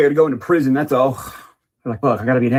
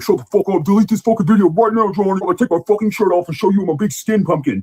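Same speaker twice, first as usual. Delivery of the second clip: mock furious rant, high-pitched and angry; 6 semitones higher than usual. Mocking a commenter's angry reply, imitating an angry commenter. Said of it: "being like".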